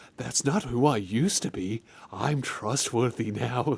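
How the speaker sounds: soft, weird, creepy, unsettling character voice. Mocking how the protagonist talks, imitating the protagonist's weird voice. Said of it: "he's talking like this".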